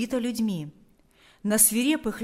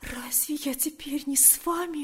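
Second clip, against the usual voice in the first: soft, hushed, high-pitched whisper; 5 semitones higher, 5 dB quieter than usual. Galia answers Pavel's plea for her to leave, whispering. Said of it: "прошептала она".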